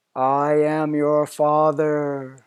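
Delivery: voice sounding funny, altered through a mask. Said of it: "it did make my voice sound funny".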